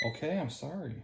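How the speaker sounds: high, soft, cooing voice.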